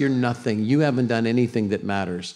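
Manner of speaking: snarling devil voice. Acting out the devil's taunt to listeners, snarling devil voice. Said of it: "Anybody ever heard that snarling voice?".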